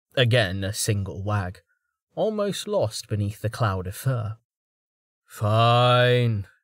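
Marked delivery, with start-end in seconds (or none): 5.3-6.5 with a sigh in the voice. Tallheart gives in to the pleading dog, with a sigh. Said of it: "Tallheart said with a sigh".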